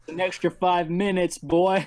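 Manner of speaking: put-on American accent. Acting out a strict parent punishing a child: put-on american accent. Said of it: "is that your American accent".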